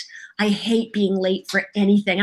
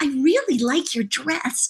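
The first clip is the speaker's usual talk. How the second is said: put-on sincere, heartfelt little girl voice, higher pitch; 5 semitones higher than usual. Explaining a voice-acting lesson on girl versus boy voices: sincere little girl voice. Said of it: "when a girl says something, they mean it from their heart. Like".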